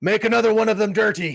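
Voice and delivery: very high, loud hollered shout. Playing a character ordering drinks from a waitress: shouting an order. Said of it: "he shouts out".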